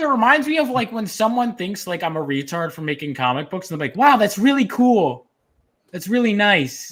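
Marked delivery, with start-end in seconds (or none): 4.0-6.9 mock condescending, patronizing tone. Imitating someone praising comic-book work: imitating condescending praise. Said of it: "in that really condescending ass way".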